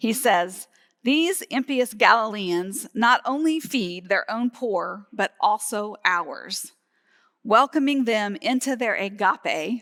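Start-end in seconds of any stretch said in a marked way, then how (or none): none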